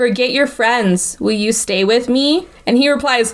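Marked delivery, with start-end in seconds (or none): 0.0-2.5 flat, expressionless monotone, utterly deadpan. Recounting a scene, speaker quotes Haldora's monotone voice. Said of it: "in the most monotone voice".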